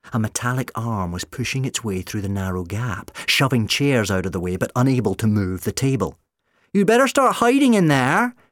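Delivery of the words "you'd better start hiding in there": very high, taunting, mocking call. Narrator reads a voice calling out to those inside a barricaded room: mocking call-out. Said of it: "Sally's voice called out mockingly".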